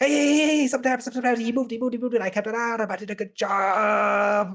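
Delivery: excited little squirrel voice, very high, rapid chatter.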